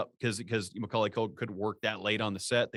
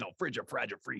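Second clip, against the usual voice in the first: put-on angry voice, quieter; 6 dB quieter than usual. Retelling how a character fake-swears in a movie: imitating a fired-up Joe Pesci. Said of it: "He's getting all fired up".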